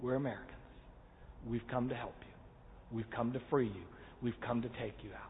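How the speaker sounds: very soft, hushed, barely audible whisper. Retelling how a SEAL spoke to the hostages, imitating a whisper. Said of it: "and starts to whisper to them".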